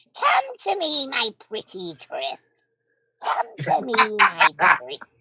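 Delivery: put-on very slow, high, swooping, sing-song old hag voice. Playing an old hag calling Chris closer: old hag voice. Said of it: "that's me, the old hag".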